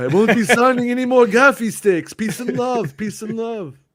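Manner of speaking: comic character voice pitched way up. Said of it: "my Kenobi voice is supposed to be [name]".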